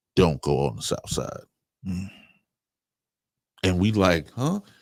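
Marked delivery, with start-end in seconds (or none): 0.2-1.5 very low, dropped voice, serious cautionary tone. Retelling how a man stopped them and gave a warning, lowered voice. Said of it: "lowers his voice".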